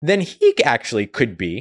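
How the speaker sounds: sudden voice crack, voice breaking on the words. Talking to viewers in a chat, voice cracking up high. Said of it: "my voice cracked".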